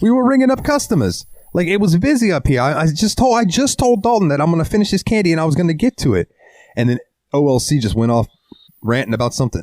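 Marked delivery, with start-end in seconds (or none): 0.0-6.3 put-on New Hampshire accent, pitched very high. Retelling what a woman from New Hampshire told Brandy, in her accent. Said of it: "I have to do her accent".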